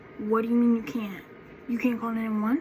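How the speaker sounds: normal talking voice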